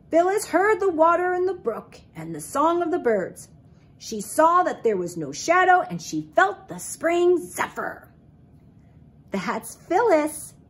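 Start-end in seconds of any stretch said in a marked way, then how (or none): 9.3-10.5 proud, prideful tone. A mother speaking about her daughter Phyllis, proud. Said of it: "her mother said proudly".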